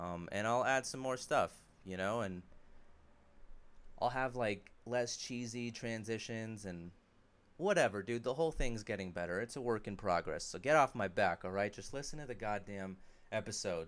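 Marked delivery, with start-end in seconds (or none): none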